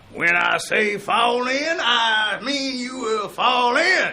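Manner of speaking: very high, slow, drawn-out yell. Asked to do Sergeant Carter, imitating him: Sergeant Carter yelling. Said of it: "Can you do Sergeant Carter?".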